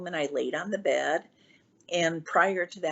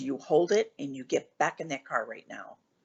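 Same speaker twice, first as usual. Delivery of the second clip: put-on stern, scolding old man voice, lower; 3 semitones lower than usual. Retelling grandfather's scolding for leaving the car: imitating a stern grandfather. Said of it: "he was stern".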